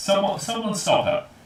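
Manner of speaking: shrill, very high-pitched, loud yelling. Voicing an elven woman spotting an intruder: shouting. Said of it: "at her shout".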